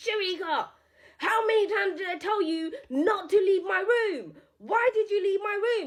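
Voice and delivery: high-pitched mock screaming with a scolding tone. Retelling how a friend screamed at her, imitating a scream. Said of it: "she screamed at me".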